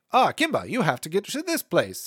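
put-on old-timey voice-acting style. Describing early voice-acting styles: early voice-acting style. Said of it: "early voice acting kind of like post transatlantic but pre naturalism voice".

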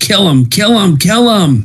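very high, top-of-the-lungs, full-lung shout. Voicing a character urging a companion to attack: shouting at the top of her lungs. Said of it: "shouts at the top of her lungs".

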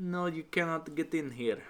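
terrible fake Russian accent. Describing embassy guards turning him away, the speaker does a terrible russian accent impression. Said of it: "I'm doing a terrible impression".

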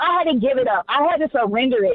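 ordinary talk, nothing marked

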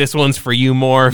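ordinary delivery

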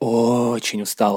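очень and устал stretched with drawn-out vowels. Showing iconic forms of meaning in speech: drawn-out vowels in очень устал. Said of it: "что ты тянешь очень и устал".

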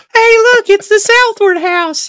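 very high-pitched, loud, goofy cartoon character voice. Joking with co-hosts about crossing paths, a speaker does a Mr. Hanky voice. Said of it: "it's like Mr. Hanky voice".

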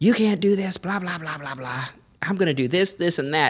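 high-pitched yelling. Telling how a guy came out of the apartment yelling at the helper, retelling a yell. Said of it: "starts yelling at him".

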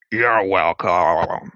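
odd, strange, distorted voice. Storyteller voices an unseen voice answering a character's thanks, weird, distorted voice. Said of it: "You hear a weird, distorted voice say".

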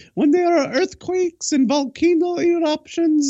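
put-on very high, sweet, vaguely Ukrainian accent. Imitating a woman who explained the end times to him: cute accent. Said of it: "she'd say with the cute accent".

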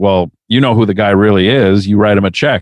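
ordinary delivery

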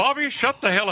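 put-on Texan cartoon dad voice. Doing an impression of a cartoon dad scolding his son: Hank Hill voice. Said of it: "Hank Hill".

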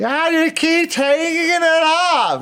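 put-on high, slow drunken jeering shout.

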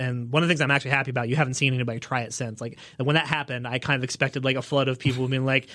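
usual speaking voice

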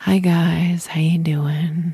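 totally monotone, tired, drained, drawn-out voice. Showing viewers how she'd have greeted them while too tired: tired, totally monotone. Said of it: "I'd be like totally monotone".

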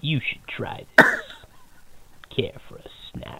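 faintly snake-like, hissing assassin voice. Right after the podcast introductions, a co-host does an Agent 47 impression. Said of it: "That's the best 47 I do".

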